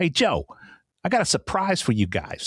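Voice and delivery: animated New York way of talking. Retelling what a driver said on the trip: imitating a New York accent. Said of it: "in his voice that's distinctly New York".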